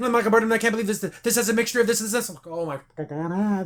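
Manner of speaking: put-on very fast talking. Retelling how a woman spewed out scientific stuff, imitating someone talking really fast. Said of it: "I'm talking really fast".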